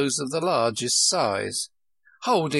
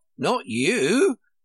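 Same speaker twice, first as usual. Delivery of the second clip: high, scornful, contemptuous retort; 5 semitones higher, 3 dB louder than usual. A twin retorts to a girl's answer about where she would be; contemptuous retort. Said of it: "Tweedledee retorted contemptuously".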